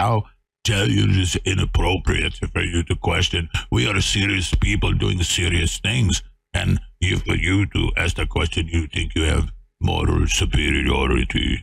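put-on arrogant man voice. Speaker illustrating for the audience how arrogant a man is, imitating him. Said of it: "That's a pretty good impression".

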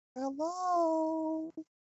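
squeaky, very high little voice, drawn out. Retelling what Danica said at the door to the stairs, imitating Danica's squeaky voice. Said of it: "she had a very high kind of a squeaky voice".

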